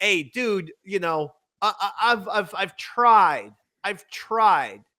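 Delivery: mock worn-down, defeated voice, slow and halting. Retelling how Earl sounded on the call: imitating Earl sounding defeated. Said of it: "Earl sounds defeated".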